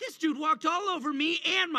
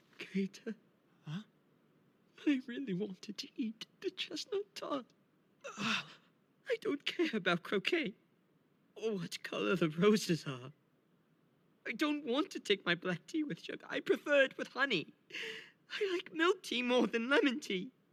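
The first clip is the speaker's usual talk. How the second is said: put-on crying like a child in a meltdown; 4 semitones lower, 6 dB quieter than usual. A character in an episode the speaker is reacting to: crying like a baby. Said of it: "Riddle Roseheart's crying like a baby?".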